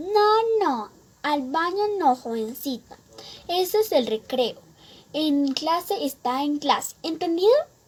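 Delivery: put-on strict, crone-like old witch voice. A student mocking their least favorite teacher, imitating Señorita Remedios's witch voice. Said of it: "dice con su voz de bruja".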